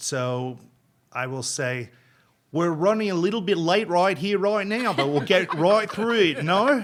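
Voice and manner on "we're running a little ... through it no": raised, pitched-up, put-on Australian accent. Asked for a taste of an accent, performing an Australian accent. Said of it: "I did an Australian accent".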